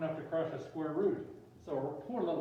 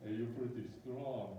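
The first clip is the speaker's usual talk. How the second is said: put-on Russian accent; 5 semitones lower, 6 dB quieter than usual. Improvising a scene where Biff walks up to Guido, in a Russian accent. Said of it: "that's a Russian accent".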